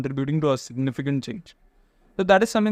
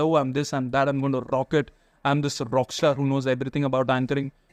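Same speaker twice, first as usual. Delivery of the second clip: plain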